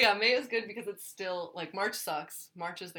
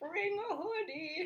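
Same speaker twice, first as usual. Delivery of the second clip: put-on very high voice of a ninety-year-old woman; 12 semitones higher, 4 dB quieter than usual. Retelling a mom's reminder to bring a hoodie, imitating mom sounding ninety. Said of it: "Why did I make my mom sound like".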